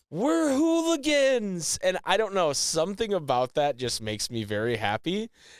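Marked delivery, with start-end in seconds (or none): 0.1-1.7 shrill yell pitched very high. Retelling a scene where Eddie yells from the car: imitating Eddie yelling. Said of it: "and Eddie yells".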